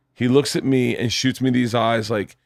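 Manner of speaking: ordinary talk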